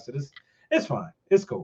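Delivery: put-on casual tone. Retelling how she answered about being arrested: imitating a casual tone. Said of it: "she just kinda says it, like, casually".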